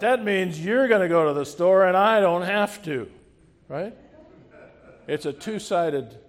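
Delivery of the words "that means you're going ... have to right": booming, great big holler at very high volume. Retelling his sister's reply to his offer to go to the store, imitating a great big shout. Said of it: "in this great big voice, she shouted out".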